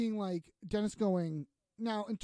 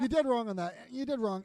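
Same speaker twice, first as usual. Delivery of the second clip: ordinary delivery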